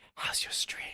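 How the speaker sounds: barely voiced, very hushed, secretive whisper. Retelling how someone came up in the cafeteria: imitating a whisper. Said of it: "comes up and whispers".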